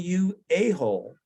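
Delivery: mock held-back, toned-down screamed outburst, mild. Retelling a match where a pro yelled at him after being hit; imitating someone screaming. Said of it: "he started screaming".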